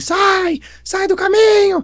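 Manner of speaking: mock very high, stretched-out, drawn-out yell. Retelling a parable, acting out someone in the forest: imitating someone shouting. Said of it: "alguém gritando assim".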